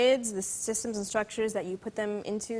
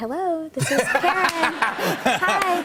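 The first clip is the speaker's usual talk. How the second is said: very loud, very slow, high, sugary sweet voice; 8 semitones higher, 8 dB louder than usual. Imitating mom answering the phone right after scolding her child, imitating a sweet phone voice.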